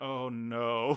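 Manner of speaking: put-on regal, queen-like villain voice. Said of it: "listening to that queen's voice going".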